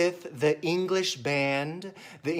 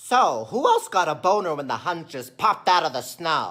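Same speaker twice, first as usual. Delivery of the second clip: raised animated courtier character voice; 5 dB louder than usual. Doing an impression of the Emperor's advisor from the animated film. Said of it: "my impression of him".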